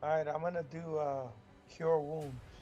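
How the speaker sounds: downhearted, dejected, downcast voice. Declaring a healing spell after getting beat up: dejected. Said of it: "Why you sound so dejected?".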